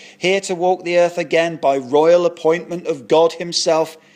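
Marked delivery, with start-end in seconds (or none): none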